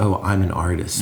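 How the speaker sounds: ordinary delivery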